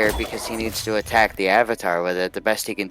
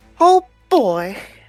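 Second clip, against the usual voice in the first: put-on cartoon mouse voice, much higher pitch; 14 semitones higher, 5 dB louder than usual. Doing a best impression for the audience: Mickey Mouse voice. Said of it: "That was that was my best Mickey Mouse impression".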